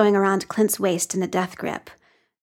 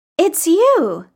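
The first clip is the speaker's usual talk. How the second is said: grinning, pitched-up voice; 9 semitones higher, 4 dB louder than usual. A boy being pulled away by a young woman speaks to Clint, grinning. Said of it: "grinning at her".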